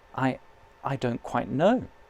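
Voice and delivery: plain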